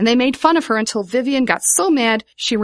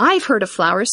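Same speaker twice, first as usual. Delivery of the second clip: ordinary delivery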